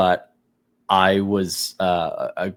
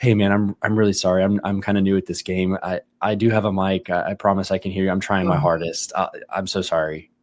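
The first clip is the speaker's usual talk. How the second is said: put-on quiet, hushed voice. Recounting apologizing over the game mic to another player, retelling a quiet apology. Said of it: "I just just quietly go".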